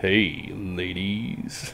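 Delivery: very low, soft, hushed, sultry seductive murmur. Answering a request to say the line: deep, super seductive voice. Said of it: "in a deep, super seductive voice".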